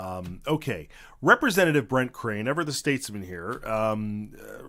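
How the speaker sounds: ordinary delivery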